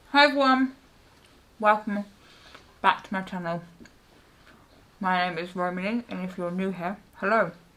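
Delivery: speaking with mouth full of food. Greeting channel viewers while eating a slice, talking with mouth full. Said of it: "Why am I talking with my mouth full?".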